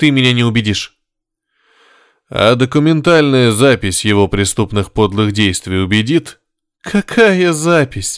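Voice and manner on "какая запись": contemptuous, scornful laughing through words, pitched high. Maria answers Nikolai's mention of a recording with a contemptuous laugh. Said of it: "Презрительно засмеялась Мария".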